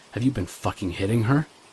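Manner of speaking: plain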